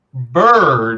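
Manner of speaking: "bird" hit hard and leaned on. Speaker announces emphasizing a word, then puts heavy stress on bird. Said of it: "I'm going to emphasize this word".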